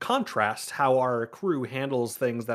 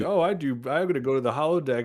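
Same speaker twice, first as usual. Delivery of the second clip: put-on drunken slurring speech. Acting out a drunk person on shift answering a coworker, imitating drunk slurring. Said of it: "you're slurring".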